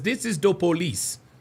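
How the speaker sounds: put-on Jamaican accent. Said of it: "She sounds like she has a Jamaican accent".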